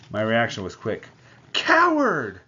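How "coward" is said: shrill, loud, very high scream. Struck across the face, the narrator screams at the man who hit her. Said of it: "I screamed at him".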